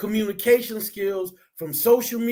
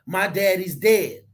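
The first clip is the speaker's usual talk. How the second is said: ordinary talk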